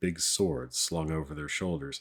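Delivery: ordinary delivery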